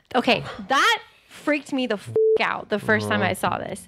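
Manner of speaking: usual speaking voice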